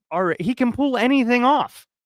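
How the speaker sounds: ordinary delivery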